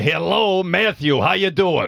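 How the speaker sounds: put-on drawn-out old man voice. Showing an early impression of his grandfather: imitating Don Levinson. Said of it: "and then I did my grandfather, Don Levinson".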